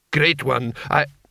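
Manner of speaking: ordinary delivery, nothing marked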